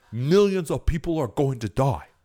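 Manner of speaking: dire, grave, doomsday-toned put-on politician voice. You mimic what he says whenever you back a policy he's against, in a Bernie Sanders impersonation. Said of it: "that's my Bernie Sanders impersonation".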